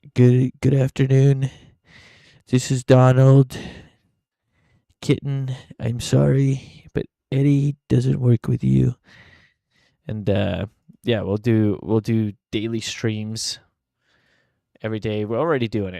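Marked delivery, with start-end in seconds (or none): 0.2-9.0 showy, loud, booming put-on politician voice. You show how you would call your job and quit in a Donald Trump voice. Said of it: "in a Trump voice".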